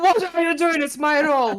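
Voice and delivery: high character voice, called out loudly from afar. Playing a character who calls over from the piano: screaming in character. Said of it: "I'm screaming over, like, from the piano".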